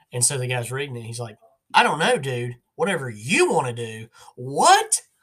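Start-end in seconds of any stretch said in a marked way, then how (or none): 1.7-5.0 very loud, furious, drawn-out swooping yell. Retelling a comedy sketch where one guy reads another's calm words, mock-yelling. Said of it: "acting like he's yelling at him".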